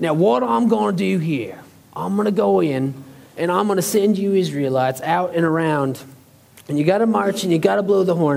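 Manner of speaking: put-on imperfect Australian accent. Speaker imagines God giving instructions to the Israelites, doing a Steve Irwin impression. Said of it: "I need to work on my Australian accent".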